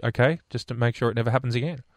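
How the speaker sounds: ordinary talk, nothing marked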